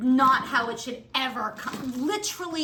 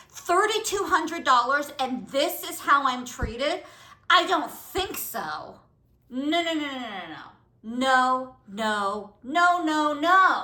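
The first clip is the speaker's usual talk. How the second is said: angry, indignant, pissed-off rant. Speaker waiting to call Beverly Hills after being badly treated: angry. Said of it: "So I am pissed off".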